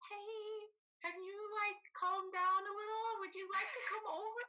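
gentle, careful delivery at very high pitch. Retelling a friend's text inviting her over: imitating a friend's gentle text. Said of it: "very gently texted".

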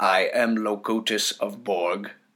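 machine-like, mechanical robot voice. Describing a scientist he recognizes, imitating how he talks: mechanical robot voice. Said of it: "robot voice like".

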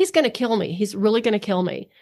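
ordinary talk

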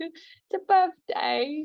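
very high, failed, botched British accent. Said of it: "I can't do a British accent".

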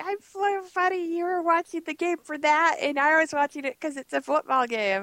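mock, high, giggly, laughing tease. Retelling how a sister teased about the game: imitating sister laughing at me. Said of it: "she was laughing at me like".

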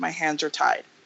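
low, very serious, dead serious delivery. Retelling Figgins talking to Sue: imitating Figgins very seriously. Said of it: "he's just very seriously".

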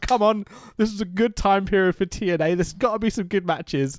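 put-on upbeat, positive voice. Retelling going into watching the matches, imitating own upbeat attitude.

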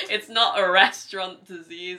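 loud, slow, exasperated tone.

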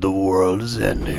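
slow, dramatic, epic movie-trailer narration voice. Retelling how a man announced the schools were closed: movie voice. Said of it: "he done it in the fucking movie voice".

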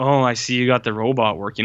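casual, nonchalant put-on tone. Retelling how scientists react to a walking robot: imitating nonchalant scientists. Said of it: "they're so nonchalant".

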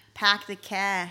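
Boston-accented speech. Comparing Boston and Baltimore accents with a co-host, the speaker shows a Boston accent. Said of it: "That Boston accent is nasty".

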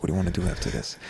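flirty half-whisper

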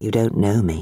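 murmured fondly. Brushing paint over her hair, he speaks to her, murmured fondly. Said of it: "he murmured fondly".

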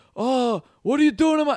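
put-on gruff movie boss voice. Trying an Al Pacino impression of a casino scene: bad Al Pacino impression. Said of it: "I can't do a fucking Al Pacino".

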